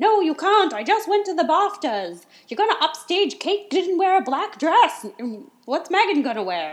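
put-on shrill, very loud British accent shouting. Act out him shouting into his cell phone, with William's high-pitched rage in a British accent. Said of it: "That was my gorgeous British accent".

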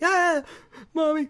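put-on terrified squeal, very high scream. Retelling a movie moment where the character panics: imitating a scared scream. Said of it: "'cause he screams like".

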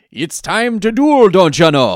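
very loud, high, strong Minnesotan accent. Trying out for the other speaker how the character might sound, in a Minnesotan Yami Yugi voice. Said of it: "What would Minnesotan Yami sound like?".

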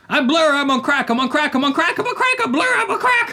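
screamed, very high and climbing. Reading out a note written several times: screaming. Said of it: "I'm just gonna scream it out".

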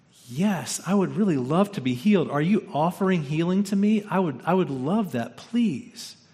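hopeful, optimistic, eager tone. Acting out how a man might answer Jesus: acting out an optimistic reply. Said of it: "he might have said to him with optimism".

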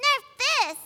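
very high, cute character voice. Retelling a panel rehearsal where a friend tried D.Va's line. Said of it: "let me try Diva's line".

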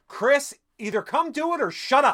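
high-pitched, loud calling out.

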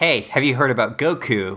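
ordinary talk

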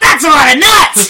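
very loud, piercing, shrill, high-pitched yell. Retelling a movie gag with an old guy smiling ear to ear: imitating an old guy yelling. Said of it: "just yells".

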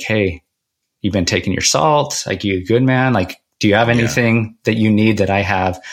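normal talking voice

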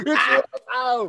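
put-on shouting like an old man. On a podcast, he plays an old man on his lawn screaming at kids. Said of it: "I'm an old man on my lawn, just screaming at kids".

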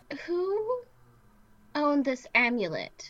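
very slow, drawn out. Voicing Brynn as a presence fills the candlelit room, speaking very slowly. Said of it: "Brynn is talking very slowly".

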